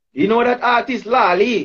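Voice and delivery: put-on Trinidadian accent, easy relaxed storytelling manner. Retelling a phone call line: imitating a Trini accent. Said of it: "Trini accent again".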